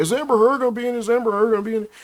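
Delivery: high mocking voice.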